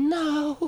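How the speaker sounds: high, soft, taunting delivery. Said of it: "Taunting you, going".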